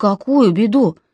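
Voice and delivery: ordinary talk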